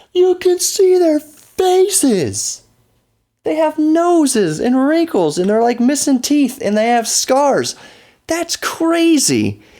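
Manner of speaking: high, slow, drawn-out, starstruck, amazed gushing.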